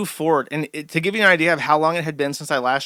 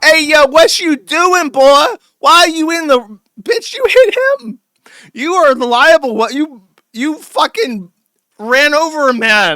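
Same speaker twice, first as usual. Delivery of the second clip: very high, very loud, drawn-out woman's yell; 11 semitones higher, 9 dB louder than usual. Retelling how a woman reacted to a driver hitting a man: imitating a woman yelling. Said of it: "The woman's yelling at him".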